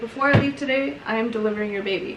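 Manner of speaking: ordinary talk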